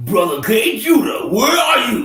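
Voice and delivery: wide-ranging radio-host voice.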